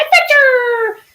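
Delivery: very high-pitched, cheeky cartoon-kid voice, calling out. Retelling how a cartoon kid always called out: imitating his "Adventure!" call. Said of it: "the kid in the cartoon would always run around going".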